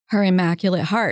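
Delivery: ordinary talk, nothing marked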